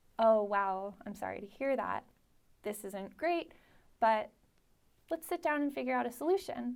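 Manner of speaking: calm, measured voice. Responding to a coworker who is freaking out; calm, a little slower. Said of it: "you take a breath, and you speak a little bit slower".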